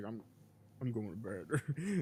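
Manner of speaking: acted, slow, glum, beaten-down resignation. Retelling a scene where Jay heads off to bed: imitating depressed Jay. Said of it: "Jay just wet and depressed".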